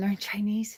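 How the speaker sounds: hushed whisper under the breath. Retelling what she whispered at a buffet: retelling a whisper. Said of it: "I was whispering".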